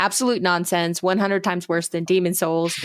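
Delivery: ordinary talk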